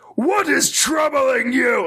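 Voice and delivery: projected, pained mutant yell, very high, slow, drawn out. Showing how Wes Johnson performs a super mutant, compared with your own, as a Wes Johnson super mutant yell.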